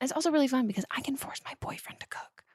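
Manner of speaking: soft, hushed whispered aside. Talking about a meal kit while the boyfriend is in the room: whispering. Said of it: "which I'm whispering quietly".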